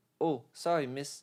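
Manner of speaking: put-on strong, distinct English accent. Retelling a classmate apologising to the teacher, imitating CJ's English accent. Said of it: "the way he said it was so English".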